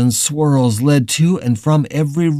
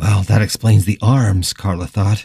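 ordinary delivery

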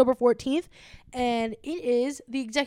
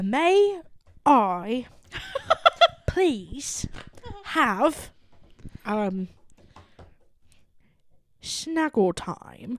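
put-on British accent, very drawn out and sing-song. Joking about someone reading the Oxford dictionary, a speaker voices him: put-on British accent. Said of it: "He's reading the Oxford, and he's like".

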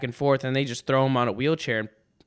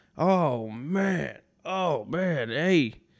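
mock-drunk man voice, higher and much slower; 2 semitones higher than usual. Retelling a guy's dad stumbling in; imitating a drunk man. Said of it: "he sounded hammered".

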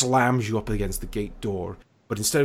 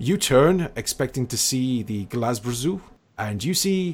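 usual speaking voice

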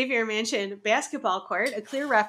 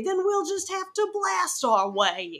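put-on rough Cockney accent, a bit higher voice; 5 semitones higher than usual. Recapping a story, voice the Reavers' reply in a sort-of Cockney accent. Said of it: "I'm sort of Cockney".

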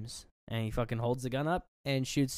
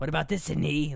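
eerie, unsettling, creepy villain voice; 3 semitones higher, 4 dB louder than usual. Retelling a scene where Billy taunts Sydney, in Billy's creepy voice. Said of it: "in his, like, creepy voice".

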